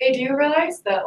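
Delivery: high, sassy call. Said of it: "that started to sound really sassy".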